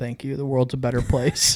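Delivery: put-on deadpan, straight-faced delivery. Retelling a traveler's reply to an airport agent taking sunscreen: imitating a deadpan reply. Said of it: "looks at him just straight face and goes".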